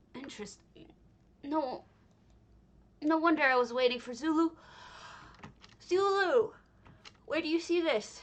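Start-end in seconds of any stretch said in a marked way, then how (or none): 5.8-8.2 talking through a yawn, pitched up. Asking the person whose vision this is a question, yawning while speaking. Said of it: "Sorry for yawning".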